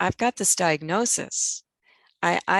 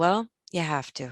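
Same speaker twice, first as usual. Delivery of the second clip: put-on super calm, unruffled, matter-of-fact, even voice. Retelling the husband's reply at home: imitating a super calm voice. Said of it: "in this super calm voice".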